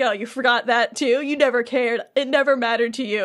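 put-on pissed-off, bitter, angry, accusing outburst. Retelling a scene as Riku, who is pissed: imitating angry Riku. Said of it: "Riku's just pissed".

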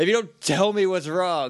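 acted, angry, pushy, aggressive, demanding tone. Retelling how Zordon grills Alpha: imitating Zordon aggressively.

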